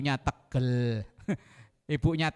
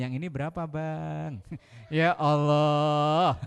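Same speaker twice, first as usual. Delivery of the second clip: gentle, polite sweet tone with Bang drawn out long. Acting out how a wife talks to the vegetable seller: mock-gentle soft tone. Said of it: "sama tukang sayur, tukang sayur ngomongnya halus".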